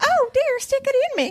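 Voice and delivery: ditzy, very high falsetto silly woman voice. Mocking how male narrators voice women: imitating male narrators' silly woman voice. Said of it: "start talking with women voices like this".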